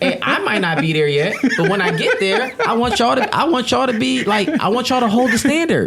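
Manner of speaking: high, laughing, pleading voice.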